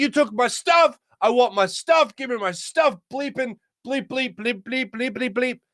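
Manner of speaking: screamed high-pitched ranting. Retelling how an intruder screamed at the landlord: imitating a man screaming. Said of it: "this guy starts screaming obscenities".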